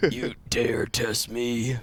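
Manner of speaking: drawn-out game-hero voice. Delivering an eighties action-movie one-liner after a kill: a bit of a Duke Nukem voice. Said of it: "bit Duke Nukem".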